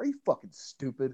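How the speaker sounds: put-on quiet threatening voice. Retelling how Billy threatened Jungle Boy: imitating Billy's low, threatening voice. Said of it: "this low, kind of low volume".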